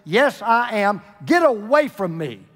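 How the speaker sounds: very irritated, put-upon tone, slow. Reading a joke where a man answers a question, in a very irritated voice. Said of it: "responded in a very irritated voice".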